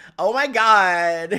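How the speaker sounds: put-on very loud valley girl accent, drawn-out god. Showing how the speaker's girl accent sounds, in a valley girl accent. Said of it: "My girl accent sounds like a valley girl".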